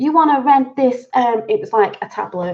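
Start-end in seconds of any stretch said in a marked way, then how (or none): 0.0-1.1 clumsy, failed put-on American accent, pitched up. Retelling people offering a tablet at the Rockefeller Observatory, in an attempted American accent. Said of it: "I can't even do an American accent".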